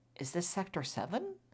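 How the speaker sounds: hushed half-whisper under the breath. Retelling a moment, the speaker recalls what they asked themselves: retelling half-whispering to self. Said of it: "I'm whispering to myself like".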